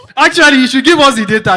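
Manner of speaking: high, loud, laughing delivery.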